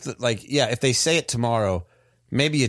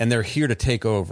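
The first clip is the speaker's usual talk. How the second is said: ordinary talk, nothing marked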